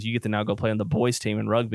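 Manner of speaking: ordinary talk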